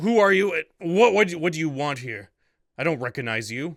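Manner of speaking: angry, furious, confrontational tone. A man storms up and puts his finger in your chest: angry confrontation. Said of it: "he storms up towards you and just puts his like finger in your chest".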